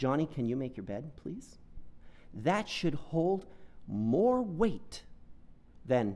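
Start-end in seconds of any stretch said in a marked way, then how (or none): 0.0-1.6 sweet tone, slightly faster pace. Showing how a parent should ask a child to make the bed: said sweetly. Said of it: "then when you say sweetly".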